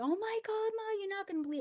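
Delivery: mock, very high-pitched, rushed, rattled-off hysterical blurt. Speaker retelling calling their mother after being sent home, retelling own hysterical call. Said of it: "I called my mother in hysterics".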